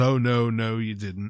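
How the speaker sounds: mock insincere voice. Retelling one man's reply to another who blamed himself, in a very forced voice. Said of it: "in a very forced voice".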